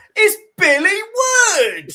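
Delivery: very high, loud, slow, top-of-the-voice shout. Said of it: "at the top of [name]'s voice".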